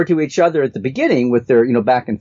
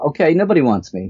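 normal talking voice

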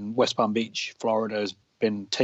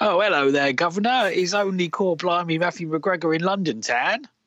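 over-the-top put-on London accent, pitched up; 8 semitones higher than usual. Podcast host introducing his co-host in London with an exaggerated London accent. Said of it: "I haven't done that for a while".

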